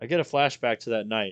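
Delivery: plain reading voice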